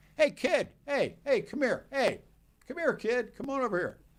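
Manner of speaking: luring, coaxing voice pitched very high. Retelling how older kids outside a store called to a sixth grader: imitating big kids calling out. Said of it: "big kids, bag snatchers".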